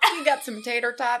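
casual put-on American accent. Quoting a guy's reply in a story, using an American accent. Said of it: "That's a great American accent".

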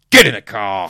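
harsh, very loud barked delivery. Reading a story aloud, voicing a man speaking to the narrator, barking a command. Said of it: "He barks at me".

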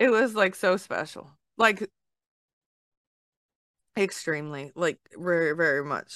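teary voice, talking through near-tears, holding them back. Reacting to a touching story from the other speaker, holding back tears. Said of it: "I'm trying not to cry".

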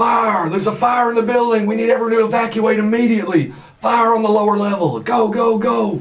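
high, loud yelling. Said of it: "and just start yelling".

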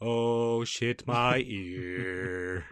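"ear" said very slowly, stretched out. Retelling what the Pope said about his ear: imitating the Pope. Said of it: "That's how the Pope talks".

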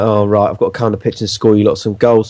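usual speaking voice

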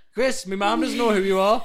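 very loud, high-pitched, carrying shout. Retelling what a woman said to them: imitating someone shouting. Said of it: "What are you shouting at us for?".

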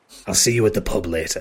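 conspiratorial whisper. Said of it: "and whispers in Treble's ear".

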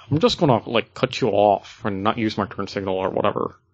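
whiny, complaining cartoon voice. Speaker voices other drivers while complaining about how people drive, in a Lumpy Space Princess voice. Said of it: "that's the voice I use for them".

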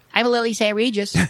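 very high, squeaky, ditzy dumb-blonde voice. Retelling an anecdote about Dorothy, voicing Lily Saint Regis in a dumb blonde accent. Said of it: "I'm trying to do a dumb blonde accent".

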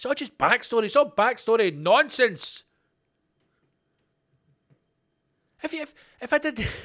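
growing irritated. Arguing over whether a pig's painting is worth twenty grand; getting angry. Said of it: "I'm getting angry".

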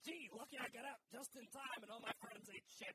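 put-on New York mobster voice and accent. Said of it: "like a New York mobster".

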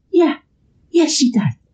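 very high-pitched voice. Retelling a movie scene, imitating Beatrice answering Mary. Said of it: "Do you like my impression?".

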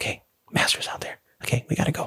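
soft, breathy whisper under the breath. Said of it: "I should probably be whispering".

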